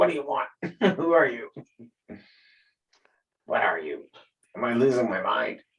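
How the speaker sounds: whispering out of mouth's side. A player speaks in character to a mouth on the wall, whispering out of the side of the mouth. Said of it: "I'm sort of whispering out of the side of my mouth".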